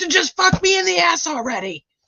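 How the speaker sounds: mock very high, enraged, furious outburst. Retelling how an angry district manager yelled at the managers: imitating a furious manager. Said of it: "He's like".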